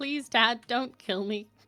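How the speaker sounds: put-on sad, pleading tone. Asking to look sad and beg Dad: fake sad pleading. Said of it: "Can I look sad and go".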